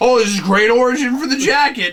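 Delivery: exaggerated, over-played, facetious sarcasm, high and loud. Repeating a joke so the sarcasm is obvious: exaggerated sarcastic tone. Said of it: "That was being facetious".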